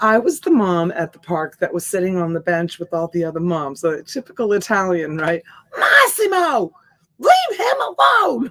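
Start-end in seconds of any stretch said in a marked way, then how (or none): 5.8-8.5 very high, swooping, drawn-out yell. A mom at the park retells yelling across the park, imitating her own screaming. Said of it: "like screaming and yelling across the park".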